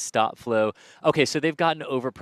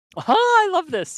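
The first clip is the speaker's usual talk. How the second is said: very high, loud, excited, squeaky voice crack; 6 dB louder than usual. Reacting to a question about why the rocket is orange, excited voice cracking. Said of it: "how excited and like puberty my voice just got there".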